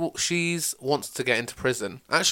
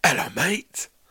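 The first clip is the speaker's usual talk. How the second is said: Cockney-style action movie star voice; 3 semitones higher, 4 dB louder than usual. Pitching an orc movie with Cockney-accented orcs: Jason Statham voice. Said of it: "it's Jason Statham, isn't it?".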